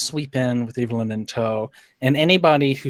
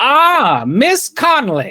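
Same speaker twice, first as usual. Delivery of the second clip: loud, very high, swooping posh voice; 12 semitones higher, 7 dB louder than usual. During a role-play evening, a character hails miss connolly to join in, loud greeting. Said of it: "I say it nice and loudly".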